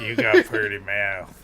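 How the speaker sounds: cartoonish character voice. Quoting a film line, which comes out as Fat Cartman voice. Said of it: "sound less Deliverance and more Cart-, Fat Cartman".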